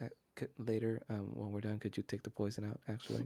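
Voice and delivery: hushed half-whisper, kept quiet. Voicing a character asking another character something privately: half-whispering. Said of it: "Then she whispers to Vomit".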